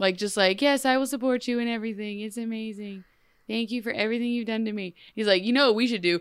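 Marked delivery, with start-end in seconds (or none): 0.6-4.9 empty, glassy, programmed-sounding fembot voice. Describing a woman now agreeing with a man, the speaker imitates a glassy-eyed fembot. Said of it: "she's now suddenly like a glassy-eyed fembot".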